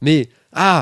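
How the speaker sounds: high, loud, furious screaming. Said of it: "t'as Eddie qui se met à hurler".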